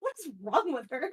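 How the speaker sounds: loud, disgusted, repulsed tone. Voicing a character who turns away from someone: disgusted. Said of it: "kind of disgusted".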